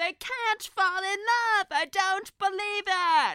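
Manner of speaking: shrill, booming, high, full-volume cry. Retelling how she reacted to the idea of them falling in love, channeling Moira Rose. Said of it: "you know that I am channeling Moira Rose".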